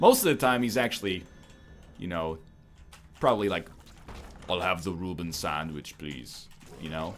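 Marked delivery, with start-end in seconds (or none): 4.5-6.5 low, casual, offhand everyday voice. Showing how he probably talks most of the time, ordering a sandwich, in an everyday Arnold Schwarzenegger voice. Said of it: "Arnold Schwarzenegger impression".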